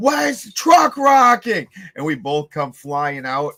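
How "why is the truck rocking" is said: shrill, very high, shrieked scream. Retelling the earthquake hitting under the truck, imitating Brian screaming. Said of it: "Brian screams".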